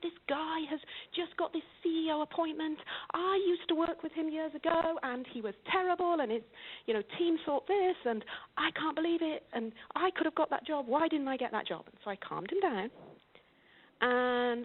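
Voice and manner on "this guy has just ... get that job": put-on angry ranting voice, higher. Retelling a client's angry phone call: imitating an angry client. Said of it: "he was on a tirade".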